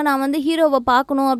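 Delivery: normal talking voice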